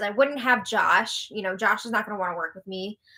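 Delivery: plain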